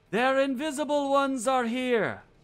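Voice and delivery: calling out loud. Voicing the imperious figure calling out over the fighting: shouted call. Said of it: "an Elven voice kind of call out".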